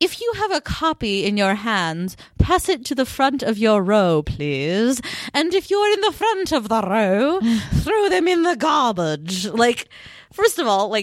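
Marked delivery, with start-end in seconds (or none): 0.0-9.5 put-on British accent. Retelling what she said about passing copies forward: put-on British accent. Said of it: "I made her British in my head".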